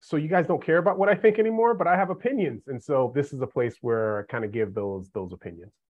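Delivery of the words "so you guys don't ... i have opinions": high, quick, protesting tone. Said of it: "you're kind of like".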